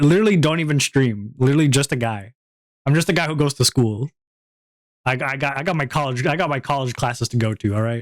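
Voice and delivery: normal talking voice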